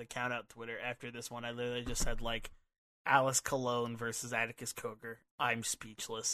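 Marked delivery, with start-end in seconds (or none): none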